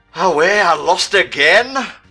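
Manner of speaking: put-on weird Scottish accent. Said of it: "a weird Scottish accent for a minute there".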